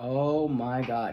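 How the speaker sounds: mock words bursting out through laughter. Retelling a psychic's reading, imitating him laughing while talking. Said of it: "He laughed so hard, he couldn't stop".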